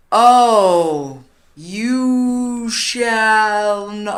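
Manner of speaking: high, very slow, stretched-out slow-motion words. Retelling how a boyfriend joked in the hall: imitating slow-motion speech. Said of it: "like, all slow-mo".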